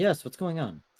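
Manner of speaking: soft, mild, gentle voice. Voicing a shopkeeper greeting a customer: softer shopkeeper voice. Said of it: "I was a more softer voice this time".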